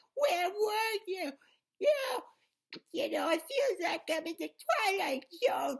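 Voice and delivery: put-on very high, shrill, loud, heavy New Jersey accent. Describing a movie, the speaker imitates how Adam Sandler plays his twin sister: New Jersey accent. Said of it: "She has a New Jersey accent".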